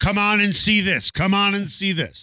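carnival barker voice. Joking about a coach promoting like a carnival sideshow: imitating a carnival barker. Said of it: "A guy who's promoting this guy who's nine feet tall".

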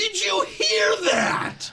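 put-on very slow, drawn-out, cracking twelve-year-old voice. Mocking a commentator's call, voice like a kid starting puberty. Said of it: "he sounds like a twelve-year-old kid".

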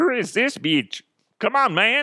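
very high alien voice with dude-talk manner. Acting out an alien's reply to a pleading visitor: put-on alien voice. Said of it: "'Cause that's how aliens talk".

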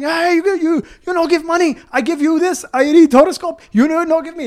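high, pushy, hectoring shout. Retelling how a man yelled after them while they walked away: imitating someone yelling.

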